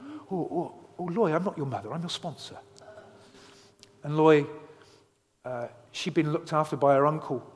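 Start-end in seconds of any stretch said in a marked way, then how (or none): 0.0-2.6 put-on soft, very middle-class English accent. Retelling a girl meeting her sponsor, speaking in a very middle-class English voice. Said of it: "in a very middle-class English way".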